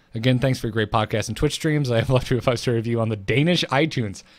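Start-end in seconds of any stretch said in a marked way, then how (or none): none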